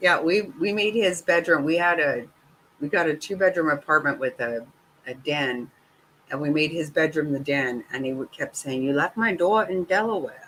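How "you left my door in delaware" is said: high, funny, put-on comic Eastern accent. Retelling what someone kept saying: imitating Mister Snotty's Eastern accent. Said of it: "He had this Eastern accent that was so funny".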